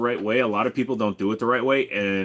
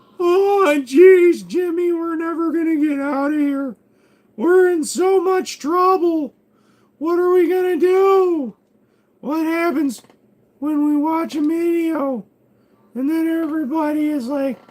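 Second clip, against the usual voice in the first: very high, loud character voice, "do" stretched; 6 dB louder than usual. Doing a Jimmy Neutron bit while waiting for the game to work: Jimmy Neutron character voice. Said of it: "doing the Jimmy Neutron thing".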